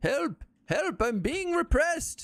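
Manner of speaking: put-on very high-pitched elderly old man cry. During a game chat, the speaker breaks into a Master Roshi voice. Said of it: "You sounded like Master Roshi".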